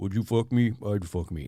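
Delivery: really deep voice, sunk right to the bottom. Describing how their voice sounded last week, the speaker demonstrates a really deep voice. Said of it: "Like that kind of deep".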